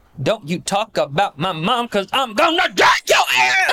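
mock, escalating, rising intensity. Retelling how Kandi sounds when she gets into a fight: imitating Kandi's escalating fight yell. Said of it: "crescendo where she's like".

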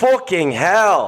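put-on Irish accent. After another speaker's bad Irish accent, repeating a man's often-heard phrase, imitating his Irish accent. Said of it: "I actually am only good at that because I heard him say that".

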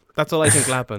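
normal talking voice

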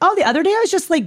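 put-on very high, loud, chirpy young child voice.

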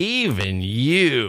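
sneering, disdainful swooping snarl with drawn-out "you". Reading a listener's email line aloud: mock snarling disdain. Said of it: "You can hear the snarl in the voice".

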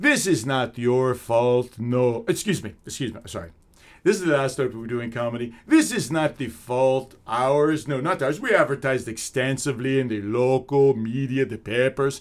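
exaggerated, thick, heavy, cartoonish Iraqi accent. Comic retells how the owner introduced him, in a thick, cartoonish accent. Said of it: "with this thick, almost cartoonish accent".

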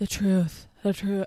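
slow, drawn-out put-on English accent. Retelling a trial testimony about the truth: imitating Johnny Depp's fake English drawl. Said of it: "his fake English accent drawl".

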